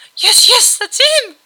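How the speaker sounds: piercing, very high, very loud shriek. A narrator reads a girl's reply to another character, shrieking. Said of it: "the girl shrieked".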